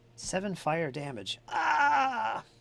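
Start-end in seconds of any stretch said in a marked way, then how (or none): 1.5-2.4 very high, shrill, drawn-out monster scream of pain. Voicing a hit creature's damage scream: monster damage scream. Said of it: "All my damage screams sound alike".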